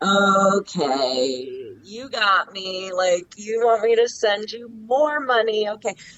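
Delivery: mock, dry, slow, smart-aleck sarcastic tone. Retelling own reply after being asked for twenty thousand dollars, own sarcastic reply. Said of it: "Why are you being a smart ass?".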